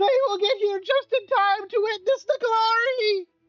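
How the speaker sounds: very high cackling villain voice. Voicing an unseen figure behind a doorway: cackling voice. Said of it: "in a cackling common language".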